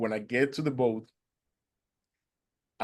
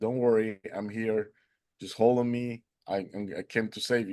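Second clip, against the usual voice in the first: ordinary delivery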